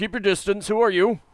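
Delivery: very loud, very high, booming shout. A game master voices a man warning approaching strangers: shouting warning. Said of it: "the man shouts out".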